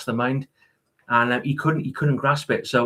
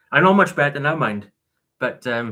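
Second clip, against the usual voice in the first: ordinary delivery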